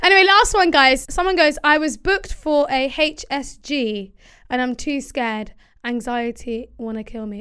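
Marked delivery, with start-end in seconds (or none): none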